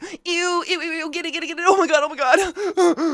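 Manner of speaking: put-on very high, shrieking, panicked little-girl squeal. Retelling a wasp flying at her face: imitating own panicked little-girl squeal. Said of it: "I go full little girl mode".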